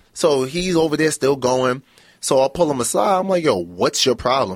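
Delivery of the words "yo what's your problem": ordinary talk, nothing marked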